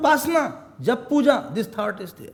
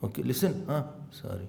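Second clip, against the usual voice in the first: mock whisper, lower and quieter; 12 semitones lower, 12 dB quieter than usual. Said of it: "sorry so whispering".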